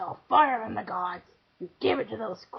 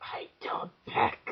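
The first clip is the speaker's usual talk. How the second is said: whispered, breathy creature snarl; 3 semitones higher than usual. Narrator reading a story, the bird answers Prometheus: snarling. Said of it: "the bird snarled".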